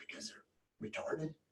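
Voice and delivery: breathy, very quiet whisper under the breath. Retelling a man's whispered answer to a question, retelling a whisper. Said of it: "he just like whispers to me".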